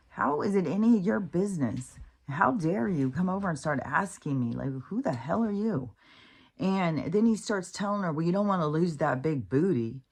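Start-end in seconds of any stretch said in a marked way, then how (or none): 0.2-5.9 put-on angry, offended, furious, indignant voice. Retelling a woman's reply to a man questioning her goals: mock-furious retort. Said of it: "And she's like so pissed".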